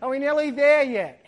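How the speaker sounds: put-on loud, small child voice. Describing a car trip, the speaker voices a child in the back seat with a little kid voice. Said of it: "this little voice from the back of the car".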